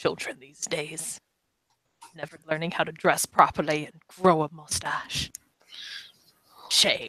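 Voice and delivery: muttering under breath. Narrating a scene, voicing the bartender's disapproving aside, muttering under his breath. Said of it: "kind of under his breath".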